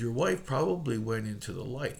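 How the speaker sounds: normal talking voice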